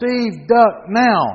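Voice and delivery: very loud, high, urgent yell. Demonstrating what you'd want someone to yell when something flies at your head: yelling a warning. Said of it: "you want somebody to yell".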